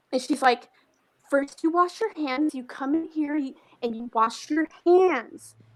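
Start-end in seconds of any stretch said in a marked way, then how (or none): 1.3-5.5 pitched-up, angry, talking-down scolding like cross parent. Retelling how a woman talked to the speaker: imitating an angry parent. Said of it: "starts to talk to me like, like I'm a child that she's, like, angry with, like an angry parent".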